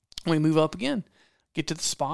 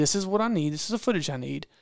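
plain

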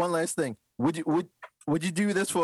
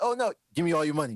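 put-on, imitated Jamaican accent. Acting out what people would say in a story: jamaican accent. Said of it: "He did a Jamaican accent".

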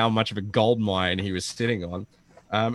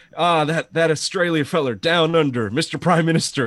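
pitched-up, fumbling, bumbling politician voice; 6 semitones higher, 4 dB louder than usual. Retelling a press conference, imitating the President forgetting a name: Joe Biden impression. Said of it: "And Joe Biden's just like".

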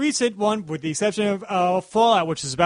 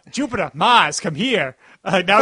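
put-on South Boston accent; 4 dB louder than usual. A speaker performing a quoted line, slipping into a Southie Boston accent. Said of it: "just going to Southie Boston accent right there".

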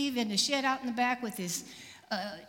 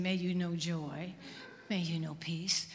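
mock-serene peaceful tone, much lower and quieter; 6 semitones lower, 4 dB quieter than usual. Retelling a night of loud music, acting out what they weren't saying: mock-peaceful blessing. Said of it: "not walking peacefully and saying".

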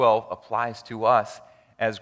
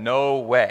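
bold, put-on voice. Retelling a volunteer's answer when asked about becoming a pastor: imitating a bold reply. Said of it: "very boldly said".

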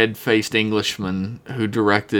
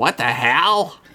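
put-on voice with the word "hell" stretched out; 4 semitones higher than usual. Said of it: "That's pretty good".

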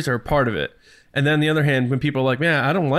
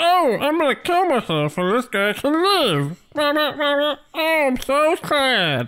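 put-on stuffed-mouth voice, marshmallow-like, pitched higher; 12 semitones higher than usual. Voicing a thinking Tauntaun's sad line: put-on voice like a mouth full of marshmallows. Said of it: "you sound like you're, you're doing that fluffy bunny thing where you shove a bunch of marshmallows in your mouth".

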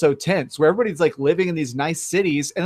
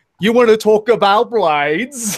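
fake, clumsy Australian accent, loud and high; 5 semitones higher, 5 dB louder than usual. Describing a character with bad animation, speaker quotes his line: bad australian accent. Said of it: "has a really bad Australian accent".

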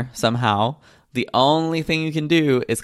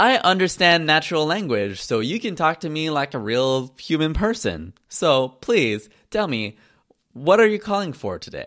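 robotic automated voice-assistant voice; 3 semitones higher than usual. Retelling a phone call answered by a robot: imitating a robot phone assistant. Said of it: "voice-assisted robot".

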